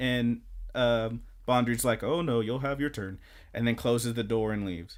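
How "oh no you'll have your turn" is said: usual speaking voice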